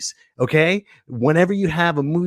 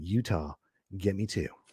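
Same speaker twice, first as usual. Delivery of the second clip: very hushed, quiet, low, subdued, toned down; 9 semitones lower, 13 dB quieter than usual. Redoing a movie line for the show's audience, toned down. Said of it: "Let me tone it down".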